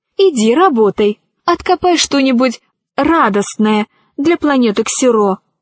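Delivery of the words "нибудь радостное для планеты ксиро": ordinary delivery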